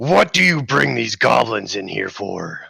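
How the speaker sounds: rough-edged, creaky brute warrior voice. A warrior addresses the party across the guild, in a booming voice. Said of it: "His voice booms across the guild".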